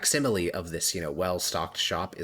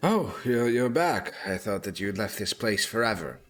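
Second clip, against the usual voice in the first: weary, winded, tired voice with heavy breathing; 3 semitones higher than usual. Voicing a tired shopkeeper greeting a returning customer: shopkeeper breathing heavily. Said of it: "breathing in a little bit heavily".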